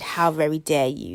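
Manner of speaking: mock furious outrage. Retelling a scammer's reaction to being challenged, imitating a livid man. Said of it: "he's livid".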